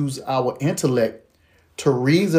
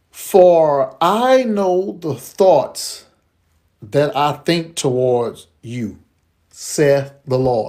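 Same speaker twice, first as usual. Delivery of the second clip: slow, deliberate, unhurried reading, letting words sink in. Reading Jeremiah 29:11 aloud to listeners so it sinks in: read slowly. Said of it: "We're gonna read this slow".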